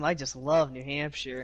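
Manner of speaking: dripping sarcastic tone. Answering a question about upcoming tracks, showing what real sarcasm sounds like: heavy sarcasm. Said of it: "You wanna hear sarcasm?".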